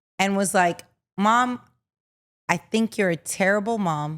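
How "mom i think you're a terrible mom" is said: mock, put-on most serious, dead-serious tone. Acting out a child telling her mom she's terrible: mock most serious tone. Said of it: "in the most serious tone".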